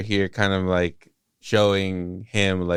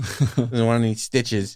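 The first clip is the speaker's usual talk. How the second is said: put-on uncaring, dismissive tone; 3 semitones higher than usual. Acting out an uncaring nurse letting a patient leave: imitating an uncaring nurse.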